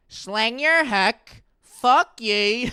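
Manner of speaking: Northern Irish accent from Derry. Showing what the Derry accent is like: Derry accent. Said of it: "Derry accent is like".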